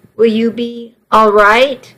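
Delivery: ordinary delivery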